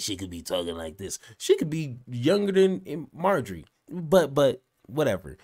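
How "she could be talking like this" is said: very low, raspy smoker's rasp. Guessing a caller's age, the speaker imitates how she might sound: smoker's voice. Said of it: "that that smoker's voice".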